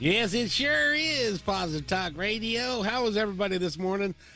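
high, put-on southern accent, radio-style voice. Radio host greeting everybody this morning, in a southern accent. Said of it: "I don't know why I use a southern accent".

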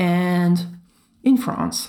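plain

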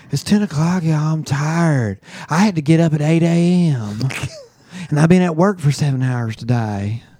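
put-on southern American accent throughout. Imitating Bethany, a co-host who falls asleep during recordings, in a put-on southern accent. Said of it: "that's your southern accent".

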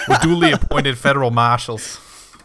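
put-on loud, high-pitched, belted Boston accent. Quoting a line from Shutter Island: Leo's Shutter Island Boston accent. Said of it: "I always do Leo's accent from fucking Shutter Island".

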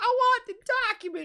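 put-on very high, childish whine like a little kid. Imitating a movie character's line: whining like a little kid. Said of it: "like a little kid".

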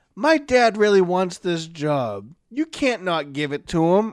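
put-on pathetic pleading tone. Retelling a movie scene, a character begging for his dad's job: imitating a pathetic plea. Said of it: "the most pathetic".

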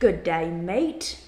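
slow, put-on Australian accent, drawled "mate". Trading jokey greetings with another speaker: put-on Australian accent. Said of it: "like an Australian, when I say mate".

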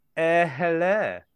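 posh, upper-class British accent. Finishing a word riddle by saying hello: posh British accent. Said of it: "saying hello, you see, as a posh British person".

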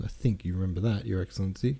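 plain reading voice

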